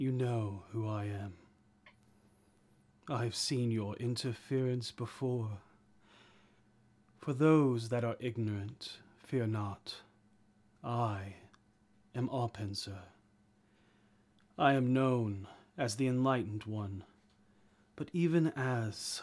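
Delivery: tranquil, patient, calm, serene guiding tone. Voicing Arpenser, who speaks into everyone's minds: calm, serene Arpenser voice. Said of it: "It is serene and tranquil".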